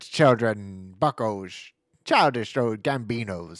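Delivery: put-on Irish accent. A show host brings back his accent to address the audience, put-on Irish accent. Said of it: "I get to bring back my Irish accent".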